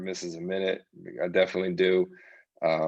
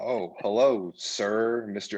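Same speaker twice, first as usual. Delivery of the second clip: mock, overly polite, deferential, excessively courteous tone; 2 semitones higher than usual. Retelling answering an unexpected phone call: imitating own too-polite reply. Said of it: "too polite".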